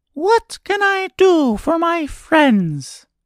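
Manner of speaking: tiny, very high, squeaky mouse voice. Reading a fairy tale aloud, voicing the mouse Queen greeting a girl: squeaky little voice. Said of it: "asked in her squeaky little voice".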